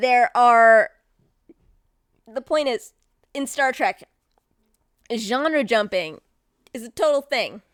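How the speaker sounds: speech broken by hiccups. A speaker talking about Star Trek episodes, hiccuping. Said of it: "I'm hiccuping so, so much".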